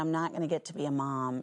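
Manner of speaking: ordinary talk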